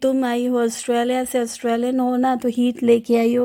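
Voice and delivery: ordinary delivery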